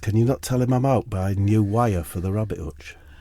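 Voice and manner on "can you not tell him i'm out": plain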